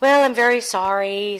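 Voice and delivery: pig voice, sympathizing tone. Telling a fable, voicing the pig answering the mouse: sympathetic pig. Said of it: "sympathized the pig".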